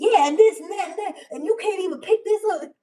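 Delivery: mock mad and hurt, very high, very loud, shrill. Retelling a young girl cleaning a hoarder's house on a tv show: imitating an angry girl. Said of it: "she was mad".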